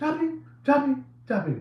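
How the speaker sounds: very high, laid-on character voice. Show the voice that guy is using, a very olive oil voice. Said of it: "very olive oil voice".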